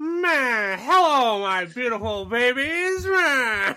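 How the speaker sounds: put-on very high, loud old-timey gangster voice. A podcast host greets the listeners in an old-timey gangster voice. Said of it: "old-timey gangster shit".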